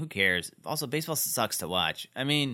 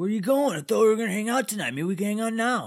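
put-on angry voice, higher pitched; 10 semitones higher than usual. Retelling a boyfriend's lines to a girlfriend: imitating Dean sounding mad. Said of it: "You're making him sound like he's mad".

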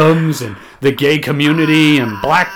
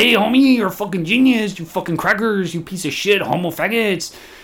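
rowdy, casual, rough banter; 4 semitones higher, 4 dB quieter than usual. Retelling what a friend said after hearing the podcast: imitating Alex. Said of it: "He's like".

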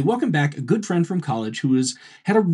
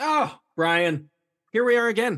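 weary, tired tone with raised pitch; 7 semitones higher than usual. Podcast host greeting co-host brian at the episode's start, weary, tired. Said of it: "you sounded like you were tired of me already".

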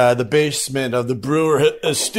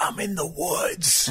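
whisper, higher in pitch and quieter; 3 semitones higher, 9 dB quieter than usual. Retelling a friend's whispered phone call from the woods: imitating a friend whispering. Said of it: ""Why are you whispering?"".

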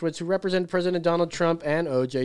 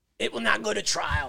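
rough, gravelly voice with creak throughout; 4 semitones higher, 3 dB quieter than usual. Quoting a legal scholar's words, slipping into a Fauci voice. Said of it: "that's my Fauci voice".

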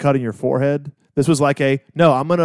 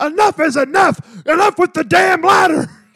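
mock fed-up shrieking scream, very high, frustrated; 4 dB louder than usual. Speaker reviewing a match, imagining JR reacting to a ladder leg drop, JR screaming impression. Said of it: "I can just hear him screaming that".

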